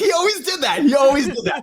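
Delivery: high, giddy, excited exclamation. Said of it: "got all ex-, giddy and, like, exclaimed".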